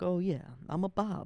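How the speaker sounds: boastful attempted Italian accent, high, slow, drawn out. Imitating a chef who talks himself up: Bobby in an Italian accent. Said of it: "I don't even know if I'm doing the Italian right".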